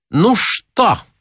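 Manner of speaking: rude, brazen, insolent tone, pitched very high. The attendant on duty asks Garunsky as he heads to his room, insolently. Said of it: "нагло спросила дежурная".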